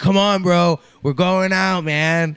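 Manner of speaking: mock shrill, booming, drawn-out drunken bro holler. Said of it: "fucking plastered".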